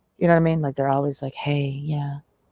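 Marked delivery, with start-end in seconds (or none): 1.3-2.2 sultry, hushed, breathy half-whispered bedroom voice. Mocking people who always talk that way, put-on breathy bedroom voice. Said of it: "They talk like this all the time".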